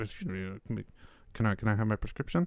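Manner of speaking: very quiet, low, indistinct mumble. Acting out the speaker's own embarrassed request, mumbled real quiet. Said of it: "I just have to mumble it. ... Like real quiet".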